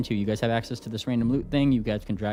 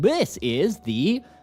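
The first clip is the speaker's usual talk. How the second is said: higher, robotic, automated computer voice; 5 semitones higher than usual. Voicing a helpful drone that answers a question: automated voice. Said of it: "just in an automated voice".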